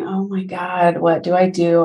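put-on terrified voice. Speaker recalls sitting in grad school unable to afford anything, retelling being terrified. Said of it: "I'm terrified".

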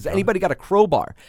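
high, play-acted loud screaming. Retelling calling out to onlookers for a crowbar: retelling own past screaming. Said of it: "I'm s-, screaming".

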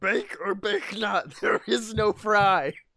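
wise little ancient master voice. Quoting how Yoda made his bacon: Yoda voice. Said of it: "Yoda is he was actually very".

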